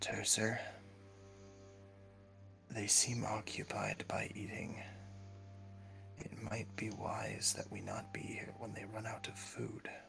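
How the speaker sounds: gentle whispered voice. Speaking in character to Tercer about the feeding creatures, in a quiet, gentle tone. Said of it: "I say kind of quietly in a gentle tone".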